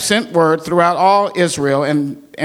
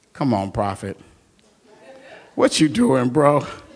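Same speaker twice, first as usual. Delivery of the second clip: low, jeering, goading, mocking voice; 5 semitones lower, 4 dB quieter than usual. Telling the story of Elijah at noon with the prophets of Baal, Elijah taunting. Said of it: "Elijah began to taunt them".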